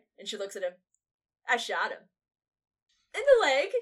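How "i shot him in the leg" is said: put-on smug, proud tone, very loud, swooping. Retelling a favorite scene where a man answers a woman, mock-proud of himself. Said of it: "he was all proud of himself".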